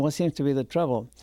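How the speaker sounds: ordinary talk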